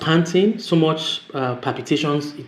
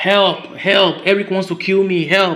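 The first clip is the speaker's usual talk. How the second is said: acted full-throated, high, drawn-out screaming; 6 semitones higher, 3 dB louder than usual. Retelling being attacked and screaming for help: retelling a scream for help. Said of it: "I just started screaming".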